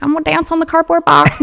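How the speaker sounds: high, sweet ballerina voice. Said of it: "Is that the ballerina voice?".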